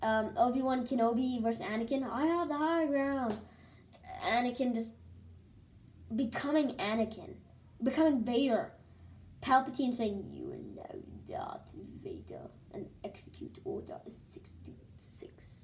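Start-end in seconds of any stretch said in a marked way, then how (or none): 10.3-15.6 very quiet, breathy whisper breathed out. Raving about a Star Wars movie, quoting a favorite scene, Palpatine impression. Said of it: "That's my best Palpatine impression".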